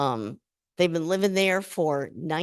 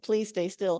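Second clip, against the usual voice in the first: acted pleading, begging voice; 3 dB quieter than usual. Retelling approaching a bird to photograph it: imitating own begging. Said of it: "begging you".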